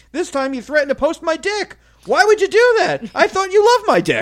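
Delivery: put-on plain matter-of-fact tone, very high voice. Speaker retelling his argument with Michelle, retelling it matter-of-factly. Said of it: "the way you said it so matter-of-factly".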